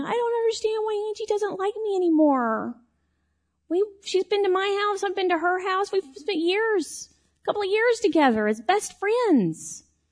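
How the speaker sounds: acted, very high, tearful sobbing voice. Recalling going home hurt after a best friend turned away, imitating own past crying. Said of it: "I remember going home crying, going".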